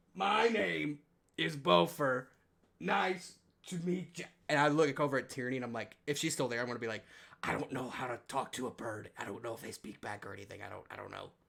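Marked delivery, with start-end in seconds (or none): 0.2-4.3 put-on baby talk, very slow, drawn-out and stretched. Retelling meeting a talking bird, imitating Buffer's slow baby talk. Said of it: "talking real slow and like real drawn out".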